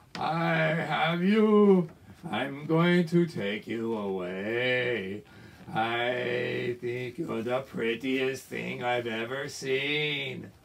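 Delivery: low, evil demon voice with stretched-out I. A storyteller voices the demon king seizing Sita: Ravana demon voice. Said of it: "by the evil demon king Ravana".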